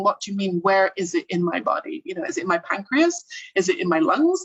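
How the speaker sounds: normal talking voice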